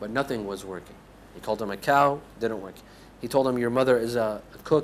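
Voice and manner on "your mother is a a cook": ordinary delivery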